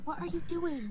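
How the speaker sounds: whispered speech. Voicing a character who comes up right behind another: whispering in character. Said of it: "she'd whisper".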